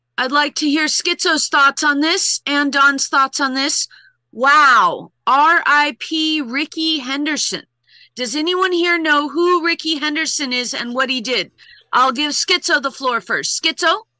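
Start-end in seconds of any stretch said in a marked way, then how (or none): none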